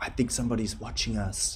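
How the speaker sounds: spooky, creepy half-whisper close to the mic. Suggesting half-whispered lines for a creepy track, demonstrating a creepy half-whisper. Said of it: "you could whisper into the microphone".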